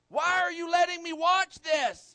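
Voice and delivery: shrill, very high, very loud outcry. Retelling how a five-year-old yelled at the TV: imitating Keenan yelling. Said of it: "he yells out".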